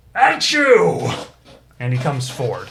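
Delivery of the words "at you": very high, very loud, booming giant bellow. Voicing a giant who bursts onto the scene and confronts a beast: voicing a giant. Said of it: "He says".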